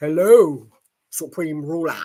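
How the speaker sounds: deep voice dropped into a baritone. Mocking a memoir's greeting scene with a L. Ron Hubbard baritone voice. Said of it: "In his baritone voice".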